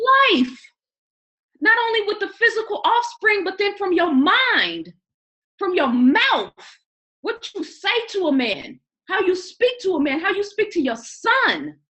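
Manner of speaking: heated, passionate voice. A speaker making a point to a co-host, heated and passionate. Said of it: "let me calm down".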